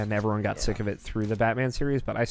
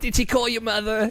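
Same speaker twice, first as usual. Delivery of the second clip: put-on elderly woman voice; 12 semitones higher than usual.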